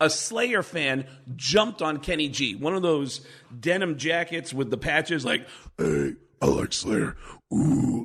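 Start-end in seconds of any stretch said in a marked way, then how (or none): 5.8-8.0 very low, deep, rumbling voice. Retelling how a slayer fan jumped on someone: imitating a slayer fan's voice. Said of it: "all Slayer fans, I think, sound like that".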